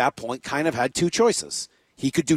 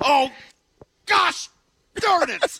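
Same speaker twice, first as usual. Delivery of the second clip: put-on upset outburst, higher-pitched. Retelling Brock's reaction after a bad shot: imitating Brock upset. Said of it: "heard Brock after a bad shot yesterday go".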